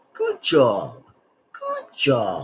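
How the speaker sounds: put-on British accent, slow, very drawn out, swooping. Saying the video's title aloud in a British accent. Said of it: "if I said that in the British accent".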